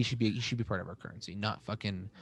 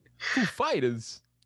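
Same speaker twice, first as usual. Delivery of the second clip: announcer-style delivery with the voice raised; 9 semitones higher than usual. Imitating Christopher Walken announcing the band: Christopher Walken impression. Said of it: "that was a great impression".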